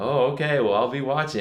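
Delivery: unconvinced, doubting tone. Retelling what a guy at the lake said, imitating his skeptical tone. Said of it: "such a tone of skepticism in his voice".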